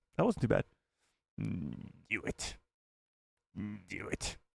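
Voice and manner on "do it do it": slow, whispered, evil emperor voice. Doing an impression a viewer asked for in chat, channeling Palpatine. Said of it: "channel my inner Palpatine here".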